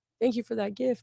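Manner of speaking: words spoken tearfully through crying. Retelling an interview where the actress wept: imitating someone crying. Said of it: "she started crying, and she was like".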